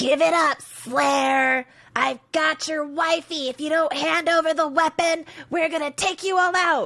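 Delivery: very high, loud, angry troglodyte creature shriek. A big troglodyte screams across the way at the slayer: screaming troglodyte. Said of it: "a big troglodyte screaming across the way".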